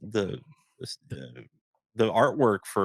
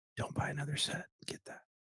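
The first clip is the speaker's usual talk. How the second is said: hushed whisper, higher and quieter; 5 semitones higher, 12 dB quieter than usual. Urging another speaker to buy the case for a set: whispering. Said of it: "Why are we whispering?".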